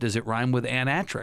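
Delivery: ordinary talk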